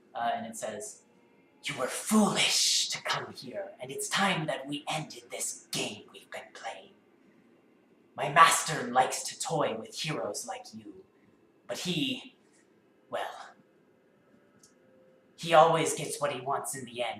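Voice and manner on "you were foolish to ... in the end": hissing, snake-like voice. The narrator voices Ixlati speaking to the heroes: hissing voice of Ixlati. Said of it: "a hissing voice".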